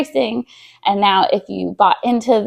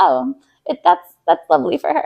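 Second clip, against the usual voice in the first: heavily sarcastic, pitched-up tone; 7 semitones higher than usual. Retelling a reply to a husband's question: imitating own sarcastic tone.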